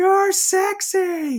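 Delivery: mock, very high, crowd-style screaming. Retelling a concert crowd member's shout: imitating a crowd member screaming. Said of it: "Somebody in the crowd just screams out".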